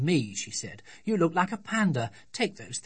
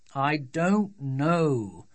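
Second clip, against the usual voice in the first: grouchy, cross tone, drawn-out "know". A father answers his daughter's question about his back, grumpy. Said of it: "said her father in a grumpy voice".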